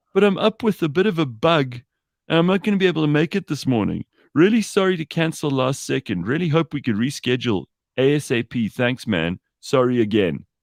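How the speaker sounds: put-on pitiful whining, pathetic and high. A host reads out a late-night cancellation message from someone, mock whiny, pathetic voice. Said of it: "I can just hear it in this whiny, pathetic voice".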